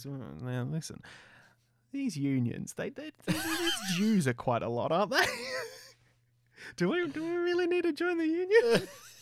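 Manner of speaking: mock passive-aggressive coaxing. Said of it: "It's just a real passive aggressive".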